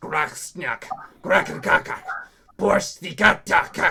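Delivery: booming, loud, enraged dwarf voice screaming. Voicing a dwarf in a camp crowd: angry dwarf screaming in Dwarvish. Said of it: "a very angry dwarf screaming in Dwarvish".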